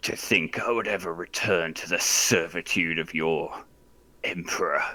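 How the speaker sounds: snarled, furious, angry words. A game master voices a man snarling at the player through the flames. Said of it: "He snarls at you through the flames".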